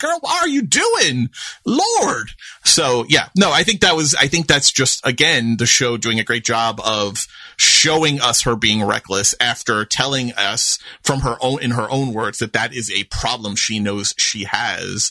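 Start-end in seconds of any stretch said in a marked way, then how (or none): 0.0-2.3 play-acted very high, swooping yell. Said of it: "I was doing that to my screen".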